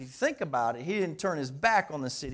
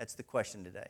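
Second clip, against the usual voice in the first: normal talking voice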